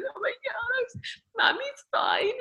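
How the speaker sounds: put-on weeping, drawn out, slow and very high. Retelling reassuring her two-year-old while in floods of tears: imitating her own tearful words. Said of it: "in floods of tears".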